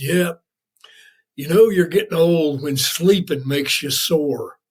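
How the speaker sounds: Southern accent impression. Retelling what an old buddy said on a bike ride, in a southern accent. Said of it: "he's just a good old Southern boy".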